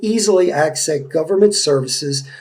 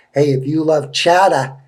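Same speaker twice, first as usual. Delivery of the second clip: poor, bad put-on Boston accent. Telling listeners about a downtown tasting event, in a bad boston accent. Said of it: "that was a very poor Boston accent".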